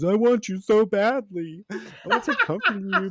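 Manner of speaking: acted high, loud, drawn-out wailing shout-crying. Recapping a scene where he begins to shout-cry at her, imitating shout-crying. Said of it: "he begins to shout cry at her".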